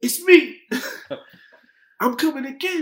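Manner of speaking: shrill, very high, loud hype-man DJ scream. Describing a DJ who screams over the track, imitating a 90s DJ screaming. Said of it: "he screams over the track like".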